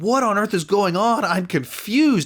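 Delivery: mock angry yell, high, mildly furious. Retelling a scene where a character shouts at her: imitating someone shouting. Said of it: "shouting at her".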